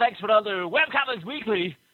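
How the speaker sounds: put-on broadcast-style radio announcer voice. Closing the show for listeners, in a radio announcer voice. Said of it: "I'll turn on my radio announcer voice".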